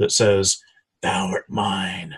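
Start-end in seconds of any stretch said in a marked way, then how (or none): 1.0-2.2 hushed, eerie half-whisper. Narrating to a player character a voice in his head, half-whisper. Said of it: "you hear this whisper in the back".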